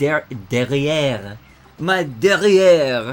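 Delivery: put-on French accent. Sounding out a French word while solving a word puzzle: bad French accent. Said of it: "I apologize for my bad French accent".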